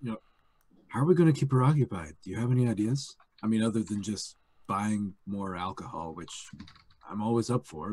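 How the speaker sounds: very quiet, hushed, secretive, plotting tone. Retelling what one person said to another as an aside, in a hushed voice. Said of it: "so in a hushed voice".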